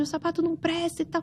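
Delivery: high, shouted complaining voice. Retelling an angry customer in a crowded store: imitating a customer shouting.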